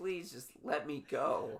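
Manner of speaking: put-on pleading scream. Voicing an old car on its final drive in: mock screaming plea. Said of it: "it was screaming at me".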